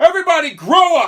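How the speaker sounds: very loud, big, authoritarian commanding bellow. Acting out guys who come up and speak, in mock big authoritarian voice. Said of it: "in this big authoritarian voice".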